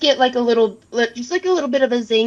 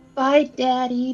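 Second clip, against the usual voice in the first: soft character voice trailing off. A player voices Trixie saying goodbye as her father walks away, very soft, trailing off. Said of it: "say it very softly and like trail away".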